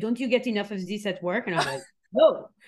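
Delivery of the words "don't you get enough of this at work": heavy French accent, put-on. Mother reacting as the speaker turns on Forensic Files, thick French accent. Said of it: "in her thick French accent".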